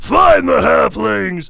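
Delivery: very loud, rough, high villain voice. Quoting a movie villain's line while discussing Lord of the Rings voices, Uruk-hai villain voice. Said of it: "there's one Urukai that says".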